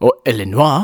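illinois pronounced the French way. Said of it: "is the French pronunciation".

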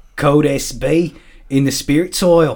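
put-on Irish-sounding accent. Calling out a code to Kaz, Irish accent. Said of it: "I don't know why I'm talking like I'm Irish".

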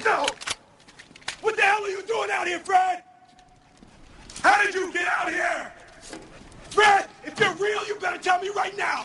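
angry yelling. Yelling at a mannequin found outdoors where it shouldn't be: angry yelling. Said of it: "just starts yelling at it".

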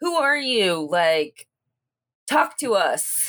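loud, projected calling out. A character who just heard a voice in a hallway, shouting into the ether. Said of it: "kind of like shout into the ether".

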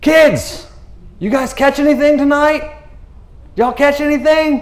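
loud shouting, like calling out far away. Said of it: "he's shouting to a boat".

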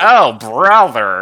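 mock exasperated tone. Showing how the actress's line sounds: mock exasperated "oh brother". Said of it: "it sounds like she's going".

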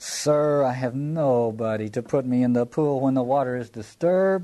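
small, whiny, complaining, pleading voice. Acting out a man's answer about getting into the pool: put-on whining voice. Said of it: "I want to do this in a little whining voice here".

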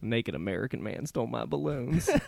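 put-on Southern accent laid on thick. Introducing himself as a tiny british child, a co-host answers in a very southern child voice. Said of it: "I made that tiny British child very, very Southern".

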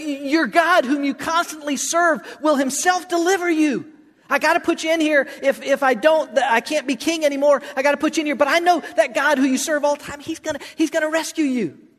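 anxious, pleading tone. Retelling a Bible passage, voicing King Darius speaking to Daniel, in an anxious Darius voice. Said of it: "you can almost hear the anxiousness in Darius's voice".

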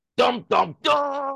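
mock ominous dramatic sting, belted high and loud.

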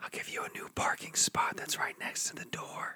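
soft, hushed, breathy whisper. Pleading with Amy not to leave the show: whispering. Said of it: "I don't know why I'm whispering".

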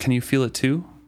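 ordinary delivery

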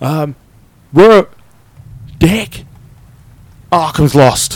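frantic, high, loud panicked cry. A narrator voices a woman calling over crackling comms amid fighting, panicked voice. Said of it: "you hear her panic voice".

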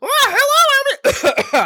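very high, loud, squeaky little sing-song voice. Imagining a movie character greeting someone: Toad voice. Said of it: "they're gonna have a Toad come up who's like".

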